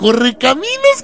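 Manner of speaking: high, sweet put-on girl voice. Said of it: "y le dijeron".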